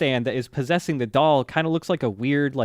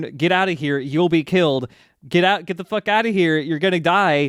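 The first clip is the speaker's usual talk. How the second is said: acted-out scream; 3 semitones higher, 4 dB louder than usual. Retelling a scene where a hidden voice yells at a guy: retelling a scream. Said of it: "He's screaming at this guy".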